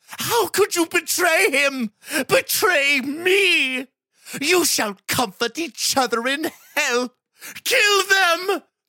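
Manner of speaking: anguished cry, very high and loud. A king turns on the man who betrayed him, crying out. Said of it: "Thaen cried".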